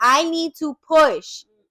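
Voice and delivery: acted screaming. Retelling being in labor and told to talk: retelling own screaming. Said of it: "I am literally sitting there screaming".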